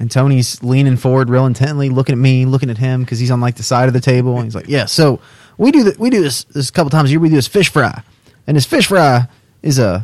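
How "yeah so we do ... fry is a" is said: hammed-up, played-up salesy tone, swooping. Retelling how someone pitched a fish fry fundraiser: imitating someone playing up a sales pitch. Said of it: "I'm doing the voice impersonation".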